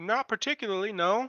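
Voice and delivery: high loud yell. The stranger laughs and answers the offer of cotton: yelling back. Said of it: "yells back".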